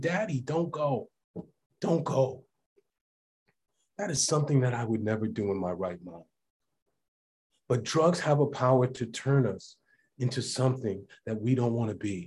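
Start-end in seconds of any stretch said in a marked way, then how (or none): 0.0-2.4 mock pleading, much slower. A father retelling his son banging on the door, retelling a child's plea. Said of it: "banging on the door saying".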